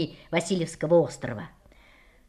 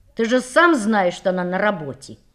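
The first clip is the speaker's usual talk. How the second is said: plain reading voice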